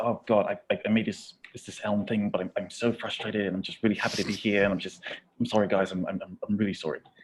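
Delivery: acted-out nervous, jittery, stammering babble, tripping over words. Doing an impression the others asked for, imitating very nervous speech. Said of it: "the whole impression is just sort of like being incredibly nervous".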